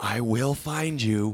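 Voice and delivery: angry, dramatic film-star whisper. Joking about loud whispering in movies, imitate the actor with a Liam Neeson angry whisper. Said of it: "he's just whispering the whole time angrily".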